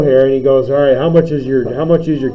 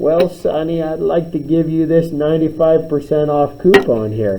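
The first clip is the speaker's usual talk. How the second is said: put-on soft, sweet, kindly old lady voice; 2 semitones higher, 5 dB quieter than usual. Game narrator voicing an old lady offering a player a coupon, in a sweet old lady voice. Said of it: "the sweet old lady".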